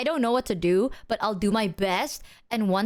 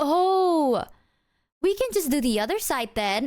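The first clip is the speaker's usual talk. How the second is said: put-on extra nice, gentle, pitched-up, long "Oh"; 5 semitones higher than usual. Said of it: "super nicely, and he was, like, super gentle".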